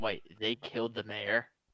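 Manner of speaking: hushed, quiet whispered aside. Playing a role-play game, whispering to him. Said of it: "I'm like now whispering to him".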